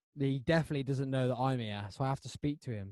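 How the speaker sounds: ordinary talk, nothing marked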